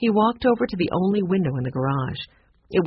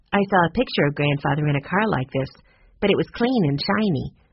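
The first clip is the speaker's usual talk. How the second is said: ordinary delivery, nothing marked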